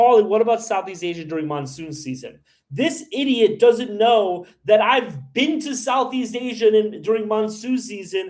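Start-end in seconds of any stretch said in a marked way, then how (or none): none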